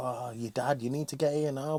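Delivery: acted, panicked, urgent screaming voice. Retelling a frantic phone call from his wife: imitating someone screaming. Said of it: "his wife screaming".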